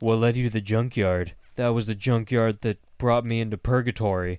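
imitated whisper. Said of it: "Nathan starts whispering".

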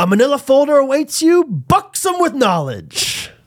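very high, bad, sing-song, swooping put-on voice. Attempting a line in a Jerry Stiller voice, called a bad impersonation. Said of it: "I'm going to try to do this in my Jerry Stiller voice".

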